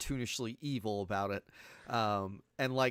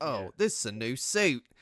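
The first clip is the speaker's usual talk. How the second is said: put-on actor voice faking American accent, louder; 5 dB louder than usual. Retelling a movie scene where someone throws oil on him: Michael Caine doing an American accent. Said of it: "my Michael Caine doing an American accent impression".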